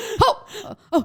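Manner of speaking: acted, very high, flinching little startled gasps. Describing an eye exam's air puff, acting out their own reaction: reenacting startled gasps. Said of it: "And this is me".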